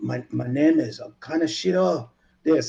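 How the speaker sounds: put-on heavy, thick Japanese accent, spoken slowly. Retelling how a man delivered a line in a scene: thick Japanese accent. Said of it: "He had like the thick Japanese accent".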